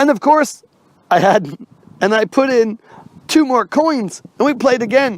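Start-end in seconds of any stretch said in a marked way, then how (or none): none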